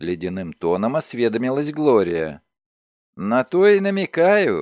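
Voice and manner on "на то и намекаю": words half swallowed by giggling, slightly high pitch. A young woman answers the other woman's question, giggling. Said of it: "хихикнула девица".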